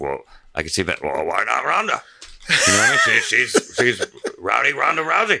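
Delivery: swooping wrestling-boss voice. Imagining WWE's answer about a They Live remake: Vince impression. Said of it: "That's a pretty good Vince impression".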